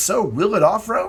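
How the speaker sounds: voice cracking up high. Hosting a car test video, asking the next question with a voice crack. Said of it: "That was one heck of a, a voice crack there".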